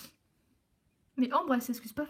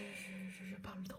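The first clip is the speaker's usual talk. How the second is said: very soft whispered aside.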